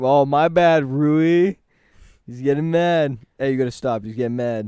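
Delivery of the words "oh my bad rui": loud, very slow, dragged-out drawl. Retelling how a friend apologizes to someone: imitating Maddox. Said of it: "He's like".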